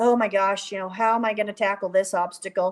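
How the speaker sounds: put-on defeated sound. Retelling leaving the ring after failing an obstacle: retelling sounding defeated. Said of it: "I leave the ring defeated".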